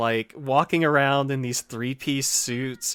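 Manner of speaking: ordinary talk, nothing marked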